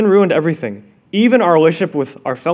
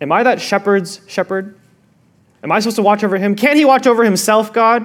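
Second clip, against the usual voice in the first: plain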